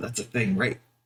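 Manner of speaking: whispered aside in a put-on voice. Playing a character who asks another character aside: whispering in character. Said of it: "He kinda whispers over at Asta".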